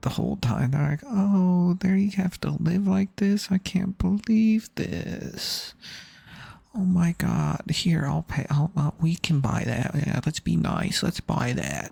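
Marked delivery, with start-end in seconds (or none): 1.0-11.9 put-on patronizing old lady, pitched up and condescending. Retelling the comments others keep making, in a mock-condescending old-lady voice. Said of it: "that's a little condes- condescending, old lady".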